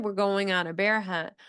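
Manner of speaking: plain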